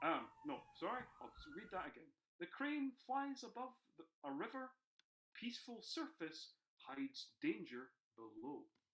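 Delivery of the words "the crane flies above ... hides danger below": pitched-up broadcaster's reading voice. Reading out the group's sample sentence for the others, in a BBC voice. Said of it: "I'll do it my best B B C voice".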